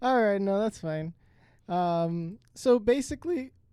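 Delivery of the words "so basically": cracked, breaking voice, higher. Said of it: "my voice cracked".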